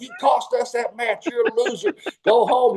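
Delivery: high, mock angry complaining. Retelling how Buddy threw chairs backstage: imitating Buddy complaining. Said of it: "He's throwing chairs and complaining".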